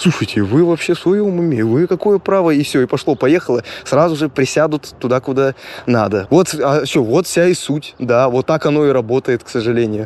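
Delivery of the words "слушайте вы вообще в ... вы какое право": stern, hefty, big burly grown man's voice. Contrasting a teen's request with a grown man confronting them, imitating a big guy's voice. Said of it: "здоровый дядька и таким голосом".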